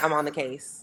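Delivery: mock eager, excited voice. Imitating a mom excited to be on jury duty: imitating excited mom. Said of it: "She be like".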